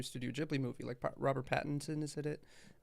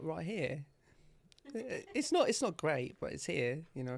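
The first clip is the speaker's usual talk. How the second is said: so-so, not great, sing-song put-on British accent; 3 semitones higher than usual. Asked by the other speaker to show the British accent, doing a not-great British accent. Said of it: "where's the British accent then?".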